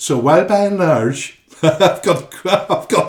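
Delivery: loud, stop-start, put-on Irish accent. Reading something aloud on a show, trying an irish accent. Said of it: "try and perfect my Irish accent".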